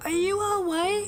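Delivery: poorly done put-on little girl voice. Reading a game character's line aloud: terrible little girl voice. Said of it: "my little girl voice is terrible".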